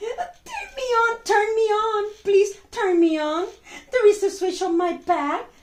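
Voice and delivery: high, frightened, scared voice. Telling a bedtime story, voicing the scared tiny star pleading. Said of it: "said the star, said the, the tiny little star".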